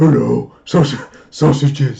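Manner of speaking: loud, booming talking-dog voice, fully in character. Asked if he can imitate a realistic dog, cat or horse, doing a dog voice. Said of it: "That's my dog voice".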